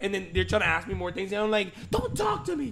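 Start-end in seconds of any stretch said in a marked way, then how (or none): 1.9-2.7 shrill, very high shouting. Recalling people trying to ask more questions, speaker answers them: retelling yelling at them. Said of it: "Just yelling at them".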